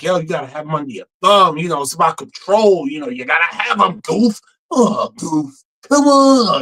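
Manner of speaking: swooping, goading voice. Voicing the neighbor Pete talking in his ear: Pete voice. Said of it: "kinda, like, in his ear, like".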